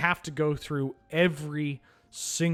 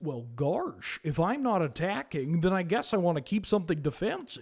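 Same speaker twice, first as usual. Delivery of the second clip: silly, goofy put-on voice; 3 semitones higher than usual. Explaining a game choice out loud, in a goofy voice. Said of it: "let me do this in the goofy voice".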